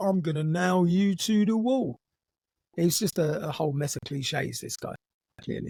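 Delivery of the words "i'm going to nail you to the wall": put-on, cliché-ridden Cockney accent. Quoting a clichéd man's threat to someone, in a put-on Cockney accent. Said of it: "why is this fellow talking with a Cockney accent?".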